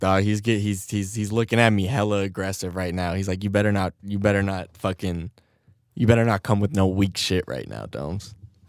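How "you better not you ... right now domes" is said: normal talking voice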